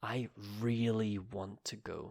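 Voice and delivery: really strongly stressed, leaned on hard. Example of a commonly stressed word in a sentence: stress on really. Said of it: "a very commonly stressed word is really".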